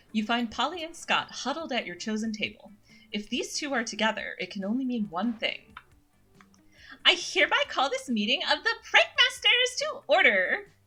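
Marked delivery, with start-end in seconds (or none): 7.0-10.6 put-on ghostly little girl voice. Voicing a character who opens a Prankmasters meeting: Polly voice based on Puka's version. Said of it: "basing my voice a little off of Puka's version of the character".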